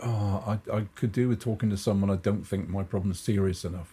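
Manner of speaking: ordinary talk, nothing marked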